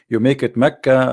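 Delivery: ordinary delivery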